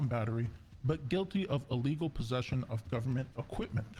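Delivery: plain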